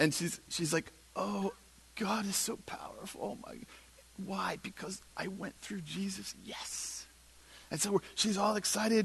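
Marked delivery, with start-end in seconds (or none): 1.2-7.1 mock-tearful, much quieter, slower. Retelling a student's reaction to a full scholarship and a suitcase, imitating her bursting into tears. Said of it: "She bursts into tears".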